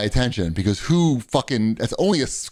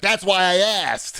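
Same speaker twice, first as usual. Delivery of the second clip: snotty, snapping yell, pitched up; 7 semitones higher than usual. Retelling a man yelling at a waiting woman: mock-snotty yell. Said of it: "like nice and snotty".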